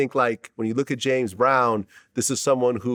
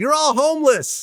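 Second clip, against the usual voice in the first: very high, hollered, yelled delivery; 4 dB louder than usual. Retelling a video of North West yelling at paparazzi: imitating North West yelling. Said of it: "yelling at the paparazzi".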